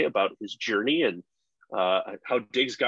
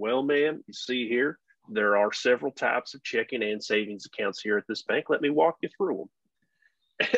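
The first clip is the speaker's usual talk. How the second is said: put-on very heavy, laid-on Southern US accent. Retelling a story about a guy at a bank, in a thick southern accent. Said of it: "saying everything in a very thick Southern accent".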